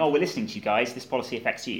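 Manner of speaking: ordinary talk, nothing marked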